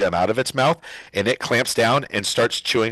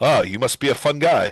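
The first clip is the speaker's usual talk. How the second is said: character voice chuckling while talking. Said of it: "as it chuckles".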